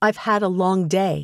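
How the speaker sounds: usual speaking voice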